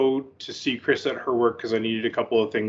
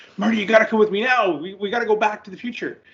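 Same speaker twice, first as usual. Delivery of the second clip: very high-pitched shouting yell; 10 semitones higher, 3 dB louder than usual. Retelling a movie scene where older Doc returns: imitating older Doc yelling. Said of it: "an older Doc is yelling at him".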